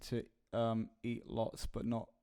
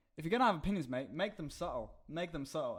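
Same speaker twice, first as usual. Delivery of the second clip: bad, terrible fake Australian accent; 5 semitones higher than usual. Retelling what a woman walking past them said, in a bad australian accent. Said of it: "that's a terrible Australian accent".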